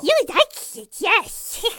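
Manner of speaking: very high, very loud, shrill monstrous creature voice. Asked to give a sample voice, performing a Gollum-style monster voice. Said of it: "this is like a Gollum style like monster".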